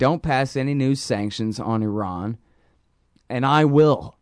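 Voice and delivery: ordinary delivery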